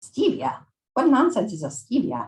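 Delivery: bad, butchered put-on Italian accent with swooping high pitch. Reading a novel aloud, the speaker voices a character's reply in a butchered Italian accent. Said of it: "I'm going to butcher an Italian accent".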